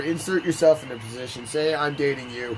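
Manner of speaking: plain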